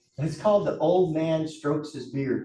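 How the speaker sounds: usual speaking voice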